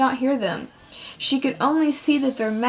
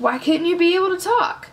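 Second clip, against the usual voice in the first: chuckling, pitched-up voice; 5 semitones higher than usual. Reading a friend's question to a girl just waking from a dream: with a chuckle. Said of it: "June asked with a chuckle".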